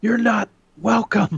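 very high, shrill, high-pitched yelling outburst. Playing Phil Spencer yelling at the hosts: imitating Phil Spencer yelling. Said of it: "he's yelling at us now".

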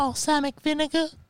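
put-on very high, soft, childlike puppet monster voice. Still stuck in a character after getting too deep into it, Elmo voice. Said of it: "That's a big word for Elmo".

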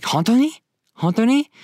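very high, stunned, shocked disbelief on "really". Showing a reply to news of a stolen car: shocked disbelief. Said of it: "But in a shocking way".

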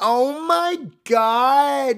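put-on very high California Valley girl voice. Describing how she switches from a fake French accent, California Valley girl voice. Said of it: "California Valley girl".

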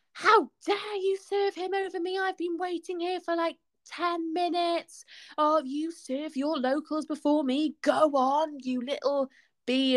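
irate, high-pitched screaming rant. Recounting a waiting woman who screamed at the speaker: retelling a woman screaming. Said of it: "just started screaming at me".

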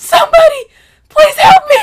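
very high, very loud, pained scream. Recalling being in deep labor and in pain, retelling a scream for help. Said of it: "screamed out for help before".

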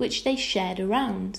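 plain

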